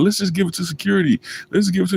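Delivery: acted weepy, tearful, high crying voice. Retelling a crying friend begging to hand it over: imitating someone crying. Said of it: "he kept crying".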